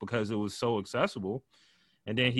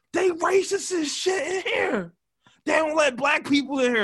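imitated man screaming, higher and louder; 5 dB louder than usual. Retelling how a guy holding a street cone screamed: imitating a man screaming. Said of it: "he starts screaming".

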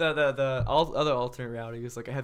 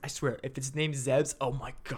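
hushed, quiet half-whisper; 3 dB quieter than usual. Retelling what Mario half-whispered during the movie: imitating Mario half-whispering. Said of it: "Mario whispers to me".

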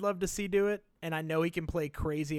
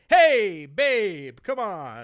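put-on smarmy car-salesman voice, louder; 10 dB louder than usual. Describing a movie villain, imitating Hades as an evil game-show host. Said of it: "he's kinda like".

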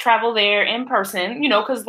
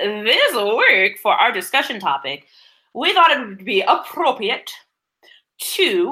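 plummy, posh, old-fashioned put-on British accent. Host introduces this week's discussion topic in a put-on British accent. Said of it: "Is that what that accent is?".

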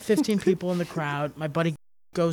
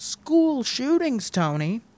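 play-acted, high-pitched yelled-out voice; 7 semitones higher, 3 dB louder than usual. Retelling how a leaving audience member yelled at the comedian: imitating a woman yelling. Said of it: "the lady just yells out".

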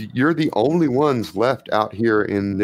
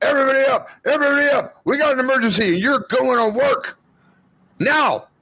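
very high, urgent, alarmed shouting. Game narrator voices Frenzy running in with an emergency, shouting. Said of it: "comes running in shouting".

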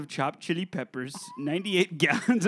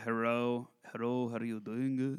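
put-on Japanese accent, lower and quieter; 7 semitones lower, 9 dB quieter than usual. Showing what a fake accent the others mention would sound like: fake japanese accent. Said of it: "like, Japanese, like the".

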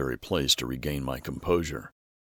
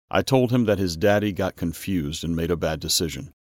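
ordinary talk, nothing marked

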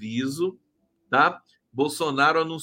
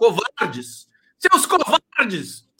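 excited, worked-up, loud swooping shout; 8 semitones higher, 6 dB louder than usual. A livestreamer calls out those who shut their chat, shouting. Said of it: "Desculpa eu gritando muito".

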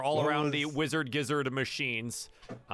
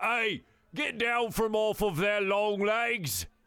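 put-on large orc voice, much higher; 6 semitones higher than usual. The narrator voices the big orc bouncer in the middle, Tulk the Bulk orc voice. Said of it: "the large large orc man in the middle goes".

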